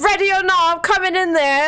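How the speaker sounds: loud, high-pitched yell. A player's character pulls out her hammer at a door, yelling. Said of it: "She pulls out her hammer and yells".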